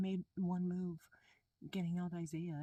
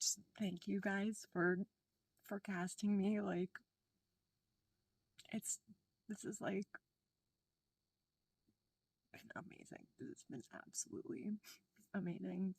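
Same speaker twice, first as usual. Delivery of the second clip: tearful, crying while speaking, slower. Asked for final thoughts at the end, answering tearful, crying. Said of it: "Even though I'm currently crying right now".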